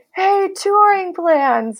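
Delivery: big, high, slow friendly calling voice. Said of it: "big friendly voice say".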